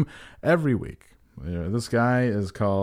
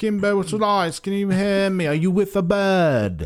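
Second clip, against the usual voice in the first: bad put-on British accent, pitched up, "bird" stretched; 8 semitones higher, 4 dB louder than usual. Joking bit, a voice calls out to a man in heaven, bad British accent. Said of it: "my bad British impression".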